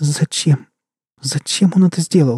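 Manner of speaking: high, trembling, quavering, shaken voice. Sveta reacting to a cruel murder: trembling voice. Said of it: "дрожащим голосом произнесла Света".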